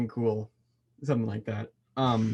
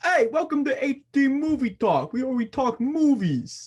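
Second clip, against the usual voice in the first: slow, high-pitched, somewhat New York accent; 13 semitones higher, 4 dB louder than usual. Co-host showing how they could open the podcast, in a kind of New York accent. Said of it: "You gone kind of New York there".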